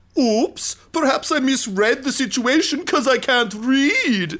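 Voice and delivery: high, loud, dim thug voice. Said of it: "he goes".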